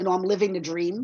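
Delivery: normal talking voice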